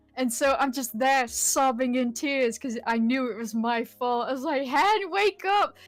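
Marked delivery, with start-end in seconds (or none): 4.7-5.7 play-acted desperate, tearful, high, panicked shouting. Retelling trying to wake someone over the mic: retelling a panicked yell. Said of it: "yelling down the mic".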